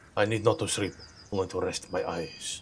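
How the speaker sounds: put-on, dodgy Russian accent. Speaking in character while the party sets watches: russian accent. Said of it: "You sound like a Russian now".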